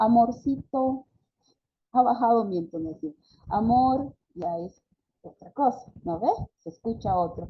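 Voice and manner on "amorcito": put-on childlike voice, higher and louder. Demonstrating how one says a pet name, in a childlike voice. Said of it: "bajo mi entonación... hago una voz infantil".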